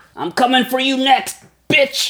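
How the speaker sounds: yelling in character. Voicing a frozen-handed enemy threatening a player: yelling in character. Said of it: "and he yells out".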